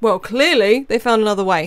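plain

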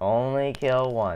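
deliberate, insistent speech. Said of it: "Now only kill one".

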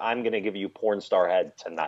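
whispered, imitated. Retelling what a girl said into his ear: imitating a whisper. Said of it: "just basically whispers".

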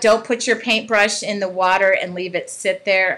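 ordinary delivery

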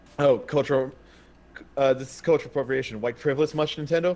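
ordinary delivery

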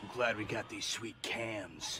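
put-on badass voice. Wearing a body cam on a stakeout, wanting to sound badass: tough badass voice. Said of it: "What is happening with your voice?".

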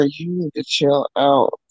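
hushed half-whisper, spoken under the breath. Retelling what someone said under their breath: imitating Eve half-whispering. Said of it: "you even hear Eve whisper".

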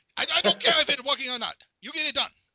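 put-on high, loud screaming in Chinese accent. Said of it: "screaming Chinese accent".

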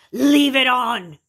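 very loud, high, shrieking demon voice. Retelling a woman looking them in the eyes as they turn the chair off; demon voice. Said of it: "this demon voice comes out".

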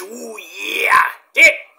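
raspy, creaky, rough growl from the throat, wrestler-style. You are showing which wrestler impressions are easy to do; do a Macho Man impression. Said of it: "Not like the Macho Man".

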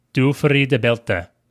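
careful Norwegian-accented speech. Podcast host repeats a remembered foreign phrase for the other host, in a norwegian accent. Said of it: "That's me using a Norwegian accent".

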